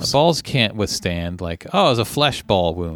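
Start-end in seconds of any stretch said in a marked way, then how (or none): none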